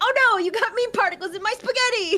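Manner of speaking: put-on, imitated yelling. Reading a line the way Pickle would: imitating Pickle yelling. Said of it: "That's Pickle to me. 'Cause he's always yelling".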